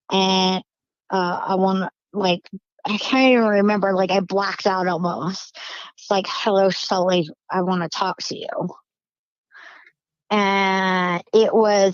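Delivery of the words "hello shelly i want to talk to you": imitated gravelly, staticky, evil demonic voice. Retelling what an unseen voice said: gravelly, staticky evil voice. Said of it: "the voice sounded gravelly".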